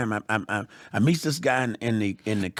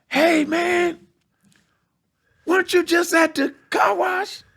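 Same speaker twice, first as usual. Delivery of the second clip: very high, loud holler; 6 dB louder than usual. Retelling how someone called out from his fence: imitating someone yelling. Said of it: "he yells from the fence".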